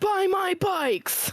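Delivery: shrill, very high screaming. Imitating the dad in a bike commercial who screams on screen: imitating a commercial dad screaming. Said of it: "he's just screaming on the screen".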